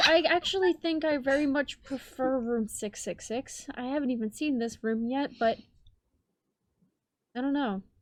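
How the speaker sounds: sounding really sad, downcast voice. Answering the game master about a room choice: sounding really sad. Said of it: "you sound really sad".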